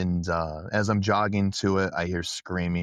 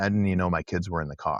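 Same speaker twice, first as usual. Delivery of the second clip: ordinary talk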